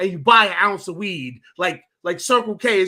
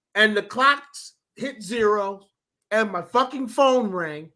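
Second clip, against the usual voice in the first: normal talking voice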